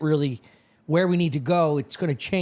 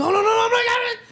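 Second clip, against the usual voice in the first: acted, very high, panicked shriek; 4 dB louder than usual. Retelling a recording of a crew in trouble: imitating a shriek. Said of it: "a shriek".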